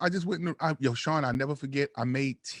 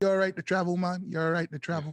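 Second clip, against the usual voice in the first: put-on Jamaican accent, male. Retelling a van driver asking if he's okay, imitating a Jamaican man. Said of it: "the Jamaican guy go".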